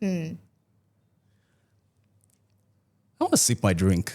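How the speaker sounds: playful teasing, sing-song and high. Trying out a practice line for a partner as directed, playfully teasing. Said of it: "Playfully teasing".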